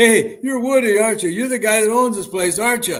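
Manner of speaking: put-on, eager, bursting, high, loud, rushed excitement. Retelling how a visitor recognized him and greeted him: imitating someone excited. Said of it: "he got all excited and he said".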